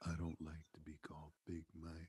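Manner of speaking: very hushed, low, barely-there murmur. Retelling what a man said about being called Big Mike, very quiet. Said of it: "He goes very quietly".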